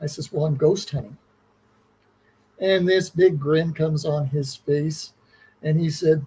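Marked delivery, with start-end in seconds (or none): 0.3-1.2 very sheepish, owning-up tone. Retelling own answer to a stranger met in a corridor: retelling a sheepish reply. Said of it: "very sheepishly".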